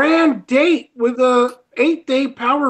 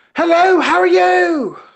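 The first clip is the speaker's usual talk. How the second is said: over-eager, very energetic, pitched up; 5 semitones higher than usual. Asked to try out a greeting phrase, give an overly enthusiastic Archie Luxury impression. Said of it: "too much enthusiasm, too much energy".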